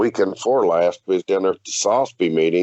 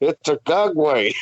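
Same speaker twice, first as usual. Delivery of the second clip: garbled, pitched-up mumble, as if mouth obstructed; 9 semitones higher than usual. Retelling own answer while taking notes: imitating talking with pin in mouth. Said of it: "And I had that pin in my mouth".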